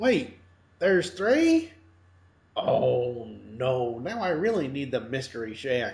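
really bad, hammed-up character voice, swooping pitch. Speaker recaps a cartoon season, voicing Gideon's realization in a bad Gideon impression. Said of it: "I'm doing a really, really bad impression of Gideon here".

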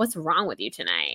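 quick, soft, rattled-off mock-defensive tone. Retelling how she answered when challenged, acting out getting defensive. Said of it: "Jen kind of gets defensive".

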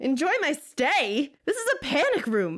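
full-on screamed, shrill, swooping. A character in a panic room answering a robot voice, screaming. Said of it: "he screamed".

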